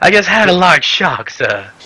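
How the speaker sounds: put-on genteel, high-pitched southern belle accent. Speaking to someone called sir after a shock, in a southern belle voice. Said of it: "you turn into a southern belle".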